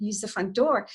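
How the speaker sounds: ordinary delivery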